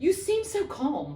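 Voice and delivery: high, slow, almost accusatory tone.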